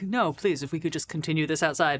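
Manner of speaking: trying to sound calm. Voicing a character defusing a scene: forced calm. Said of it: "he's trying to be very calm".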